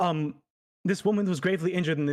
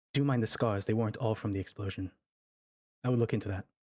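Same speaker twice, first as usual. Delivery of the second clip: low, hushed half-whisper under the breath; 6 semitones lower, 4 dB quieter than usual. A character half-whispers to the guard before running off, half-whispering. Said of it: "He whispers to the guard".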